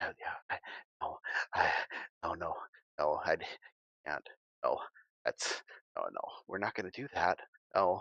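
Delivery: low, hushed, under-the-breath muttering. Narrator voices a man slowly edging toward people talking, half-whispering to himself. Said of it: "he's whispering to himself".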